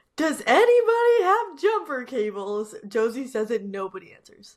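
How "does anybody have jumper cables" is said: loud, swooping high call. Retelling asking a room of strangers for jumper cables: imitating a friend screaming. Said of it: "she screamed it".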